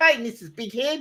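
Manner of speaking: put-on Australian accent, pitched way up high. Quoting the guy who voiced Rocco, in Rocco's Aussie voice. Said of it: "that guy could do a perfect Aussie voice".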